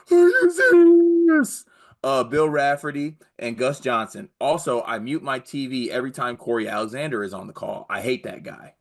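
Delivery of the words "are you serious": very loud, high-pitched belted yell. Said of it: "can you say, 'Are you serious?' in the Dickie V voice?".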